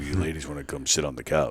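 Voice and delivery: very hushed, smooth, seductive put-on voice. Inviting ladies to the couch as a casting director: put-on seductive voice. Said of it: "I'll use the voice again".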